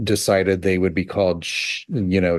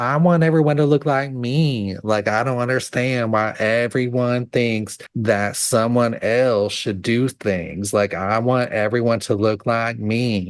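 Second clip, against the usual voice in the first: cartoon squirrel character voice; 3 semitones higher than usual. Answering Chip in character, in a Sandy Cheeks voice. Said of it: "You are now Sandy Cheeks the squirrel".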